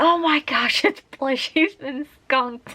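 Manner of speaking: high, loud, alarmed, shocked cry. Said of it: "we were like".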